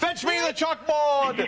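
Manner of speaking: high, slow mock shout, bellowing.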